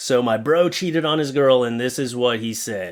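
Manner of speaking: ordinary delivery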